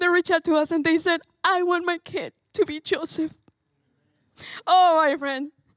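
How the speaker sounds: very slow, tearful crying with voice breaking. Speaker recounting parents reaching out after watching a video, crying with voice breaking. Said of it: "Sorry, I didn't want to cry".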